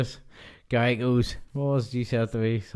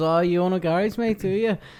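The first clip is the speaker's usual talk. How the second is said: put-on Scottish accent, pitched up; 7 semitones higher than usual. Retelling a story about a man in the front row, in a put-on scottish accent. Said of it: "Why are you doing a Scottish accent?".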